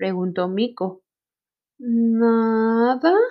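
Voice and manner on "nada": hesitant, faltering delivery. Narrator reading a story, the hippo answering the monkey, hesitant. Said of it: "Titubió Hipopótamo".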